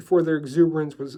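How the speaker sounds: ordinary delivery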